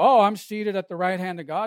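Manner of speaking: usual speaking voice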